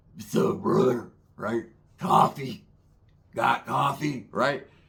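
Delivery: put-on worn-out, throat-worn, scruffy, old-school voice. Describing an old-school guy, the speaker quotes him, imitating a scruffy voice. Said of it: "just scruffaluffagus ass voice".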